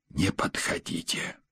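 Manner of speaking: hushed, soft whisper, barely voiced. A man whispers to a woman while her mother-in-law knocks at the door; whispered. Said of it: "шепотом предложил он".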